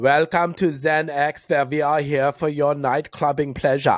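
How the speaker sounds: put-on German accent. Voicing the zen x club's welcome greeting, german accent. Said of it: "It just said it with a German accent".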